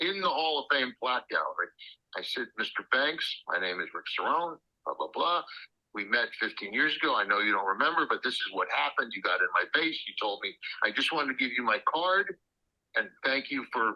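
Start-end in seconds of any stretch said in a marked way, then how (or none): none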